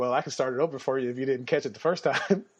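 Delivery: ordinary delivery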